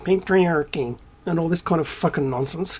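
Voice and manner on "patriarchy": mocking American accent, woman's voice. Ranting speaker imitates certain women's complaints, in a mock american female voice. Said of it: "you've always had to say it in the American female voice".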